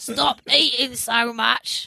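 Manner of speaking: put-on old witch voice. Retelling something he told them, done in an old witch voice. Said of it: "like an old witch".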